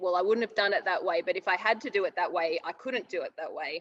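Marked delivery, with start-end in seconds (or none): none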